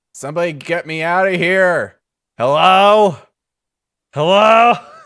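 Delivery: very loud, high yell. Game narrator voices Karg calling out amid falling rubble, Karg yelling from across room. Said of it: "you yell the yelling of Karg".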